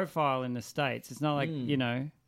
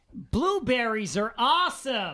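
very high, fake American accent; 9 semitones higher, 4 dB louder than usual. Answering a request to do an American accent: put-on American accent. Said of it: "give me your American accent".

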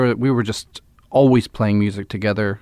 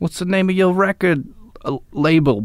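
put-on Boston accent, higher in pitch; 8 semitones higher than usual. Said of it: "You know that accent".

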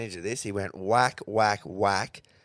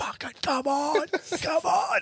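whisper-yelling, pitched way up very high. Retelling watching the win late at night, imitating his own whisper yells. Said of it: "doing those whisper yells".

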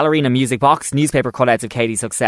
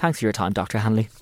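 put-on, bone-dry, matter-of-fact deadpan delivery; 2 semitones lower, 7 dB quieter than usual. Retelling a detective's reply to a rude doctor: imitating a deadpan line. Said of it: "just deadpan goes".

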